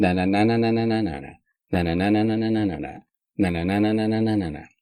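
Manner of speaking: fast sing-song na-na, same falling tune each phrase.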